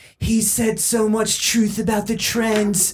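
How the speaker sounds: sneering, mocking put-on send-up voice. In a conversation about right-wing people, doing a mocking liberal voice. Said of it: "I'm doing the liberal voice".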